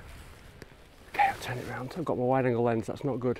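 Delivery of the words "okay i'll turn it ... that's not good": soft, hushed narration voice. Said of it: "I'll do my Morton voice".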